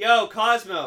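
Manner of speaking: slow, loud calling-out voice. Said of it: "He's like".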